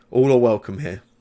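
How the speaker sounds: ordinary delivery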